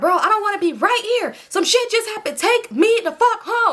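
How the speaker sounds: yelling with the voice very high-pitched. Retelling a ride after a shooting, demanding to go home: imitating own yelling. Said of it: "I'm yelling now".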